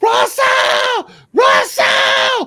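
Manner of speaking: very loud, high, shrill panicked scream. Telling how a dude started screaming when a 357 magnum came out: retelling a scream. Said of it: "the dude starts screaming".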